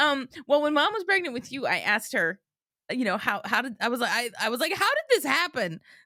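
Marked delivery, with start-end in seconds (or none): 4.7-5.8 speaking in a higher-pitched voice. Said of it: "That's how I said it".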